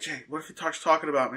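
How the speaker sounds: mock-nervous woman voice. Man retelling what his ex-wife said at a show, imitating Autumn's nervousness. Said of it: "she gets super nervous".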